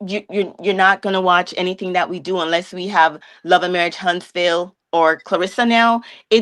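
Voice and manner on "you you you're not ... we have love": ordinary delivery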